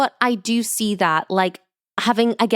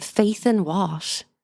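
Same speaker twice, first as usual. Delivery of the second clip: put-on utterly sincere, grave, dead-serious, earnest tone; 4 dB quieter than usual. Retelling a character's earnest question to a friend: imitating an utterly serious question. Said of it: "asking her with the utmost seriousness".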